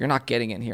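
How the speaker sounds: put-on man laughing mockingly. Retelling a man turning them away at the carpet: imitating a man laughing mockingly. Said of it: "the guy laughed at me".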